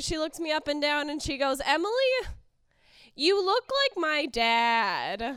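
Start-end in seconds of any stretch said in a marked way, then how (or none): 1.6-5.2 put-on slow, unhurried little-girl voice, dad drawn out. The speaker quotes a four-year-old she picked up from school, imitating a four-year-old. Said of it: "this particular four-year-old".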